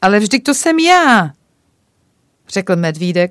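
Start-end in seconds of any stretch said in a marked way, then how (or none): 0.0-1.3 loud, greatly astonished, caught off guard. The little bear, told the one he asks for went to visit him, very surprised. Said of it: "velmi překvapen".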